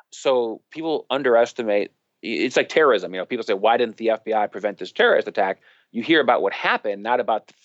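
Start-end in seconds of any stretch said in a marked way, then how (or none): none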